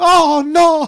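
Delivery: put-on very high, loud Italian old-woman gasp. Recalling being walked in on by the grandmother, imitating her italian accent. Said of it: "like with her Italian accent".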